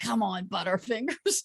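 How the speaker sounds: whisper. Retelling what their mom whispered after they missed a ball, whispering. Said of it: "my mom whispers over to me".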